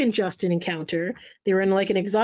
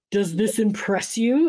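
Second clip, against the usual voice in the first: acted condescending, superior, unimpressed tone. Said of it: "in a condescending tone".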